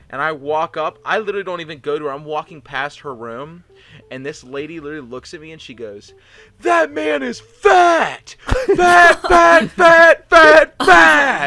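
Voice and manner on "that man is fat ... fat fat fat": very loud, very high, shrill, drawn-out scream. Retelling a lady who keeps screaming at him: imitating someone screaming. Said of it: "She's still screaming it".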